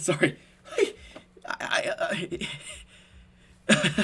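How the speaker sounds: giggling, laughing helplessly mid-sentence. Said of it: "I don't know why I'm laugh-".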